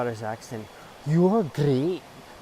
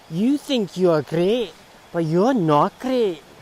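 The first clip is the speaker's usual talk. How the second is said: put-on Glaswegian accent, loud and high; 6 semitones higher, 8 dB louder than usual. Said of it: "attempted Glaswegian accents".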